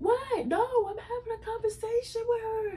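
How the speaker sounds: very high, heated, agitated screaming. Retelling a fight where one woman yells at another, imitating someone yelling. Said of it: "Ledora's yelling at her".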